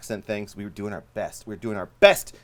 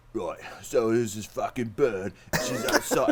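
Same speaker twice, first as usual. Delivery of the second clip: put-on British accent, sing-song and casual; 2 semitones higher than usual. Retelling what a man said while loading out after a gig: imitating a British man. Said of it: "that's what he sounded like".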